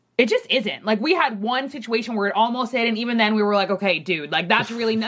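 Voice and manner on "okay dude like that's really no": ordinary talk, nothing marked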